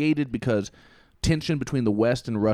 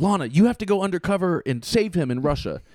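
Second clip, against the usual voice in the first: put-on freaked-out screaming, high and urgent; 6 semitones higher than usual. Retelling a cartoon mother ordering Lana to rescue her son: imitating Mallory screaming. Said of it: "she's screaming at Lana".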